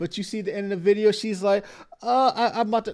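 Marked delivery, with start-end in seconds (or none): 2.0-2.9 mock choking up, near tears. Imitating the woman in the video about to break down: imitating someone near tears. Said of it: "she is about to go break down into tears".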